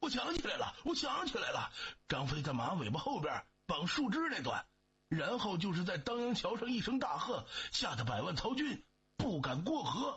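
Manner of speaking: high-pitched, loud shouting. A rider chasing someone suddenly remembers something, shouting while chasing. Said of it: "一边追一边大声喊道".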